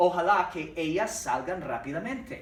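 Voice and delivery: ordinary talk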